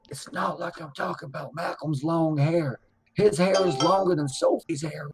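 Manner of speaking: secretive, hushed stage whisper. Speaking into a phone in character, half-whispering. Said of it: "I'm gonna whisper in the phone".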